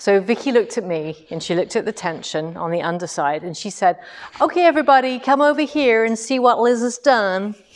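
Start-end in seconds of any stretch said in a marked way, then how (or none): 4.4-7.5 put-on American accent, pitched up. Retelling what Vicky said to the class: imitating an American accent. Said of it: "I did mimic the American accent".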